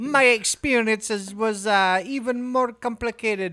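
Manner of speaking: mock Indian telemarketer accent. Reading a line aloud the way he would read it, sounding like an indian telemarketer. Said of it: "You're kind of sounding like Indian telemarketer".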